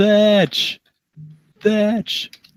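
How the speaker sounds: large, booming shout. Game narrator voicing a figure the players suddenly hear, Earthmover yelling. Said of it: "you just suddenly hear someone yelling out".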